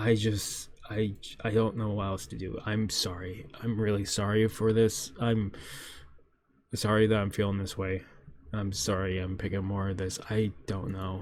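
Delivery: depressed, low tone. Apologizing to viewers for rambling instead of reviewing, depressed and low. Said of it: "I'm rambling of a fucking depressed motherfucker".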